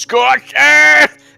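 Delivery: very high, rough, in-character battle yell. A player acts out their character raising a mace and yelling, a battle yell. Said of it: "and I yell".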